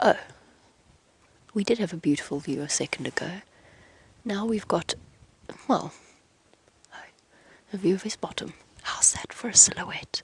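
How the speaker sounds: whispering close into the mic. Whispering into the mic so as not to disturb other guests nearby. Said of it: "I am whispering into my mic".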